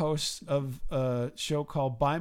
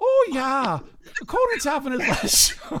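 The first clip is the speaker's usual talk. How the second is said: high-pitched, lilting, sing-song put-on Irish accent; 10 semitones higher, 7 dB louder than usual. Retelling what a guy said back to him, in a put-on Irish accent. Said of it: "talks back to me in an Irish accent".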